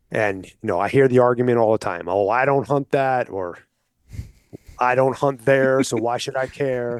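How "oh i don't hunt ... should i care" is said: put-on folksy Southern drawl. Quoting the argument hunters often make: imitating a southern accent. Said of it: "sorry for doing the Southern accent on that".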